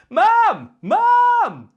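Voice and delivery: very high, very loud, drawn-out shout. Explaining healthy shouting with a toilet-paper example: shouting for mum. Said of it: "I'll shout my mum".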